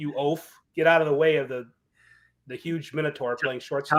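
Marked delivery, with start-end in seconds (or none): none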